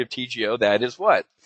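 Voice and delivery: ordinary talk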